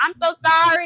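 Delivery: loud, high-pitched hollering. Retelling how a driver apologized while driving off, retelling a yelled apology. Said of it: "he drove off yelling out the window".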